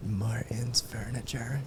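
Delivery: soft, slow whispering.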